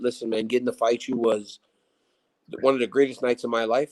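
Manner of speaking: ordinary delivery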